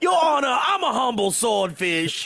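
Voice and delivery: high voice with Southern accent. Joking with co-hosts about fish suing, one speaker voices a little lawyer fish. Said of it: "that's the voice of a swordfish".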